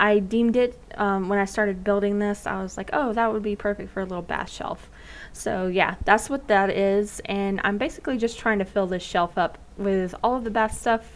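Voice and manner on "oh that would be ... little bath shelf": plain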